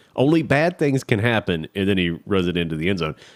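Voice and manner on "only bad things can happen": frantic high-pitched yelling. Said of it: "I'm yelling at the T V and saying".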